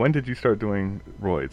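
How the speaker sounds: ordinary talk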